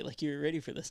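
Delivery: ordinary delivery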